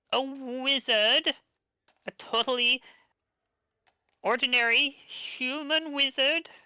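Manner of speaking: forced grand theatrical flourish, very high, falling flat. Voicing Polina as she introduces herself: botched theatrical flourish. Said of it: "she tries to say it with a flourish".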